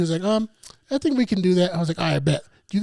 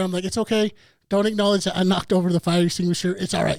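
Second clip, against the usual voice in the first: ordinary talk, nothing marked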